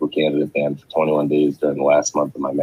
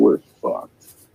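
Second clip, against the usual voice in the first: ordinary talk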